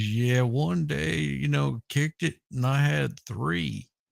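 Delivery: very slow, sluggish, drawn-out delivery. Retelling a story about a guy on tour: imitating a very slow talker. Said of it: "he talked really slow".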